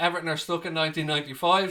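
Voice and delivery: normal talking voice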